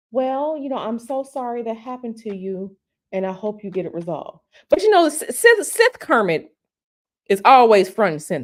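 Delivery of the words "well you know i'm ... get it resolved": put-on polite fake-nice tone, much quieter. Acting out what his nice side would say, in a mock fake-nice tone. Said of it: "Nice Kermit".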